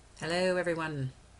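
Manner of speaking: speaking down low, low voice. Greeting viewers at the start of a video, low voice. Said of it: "I don't know why I'm talking in such a low voice".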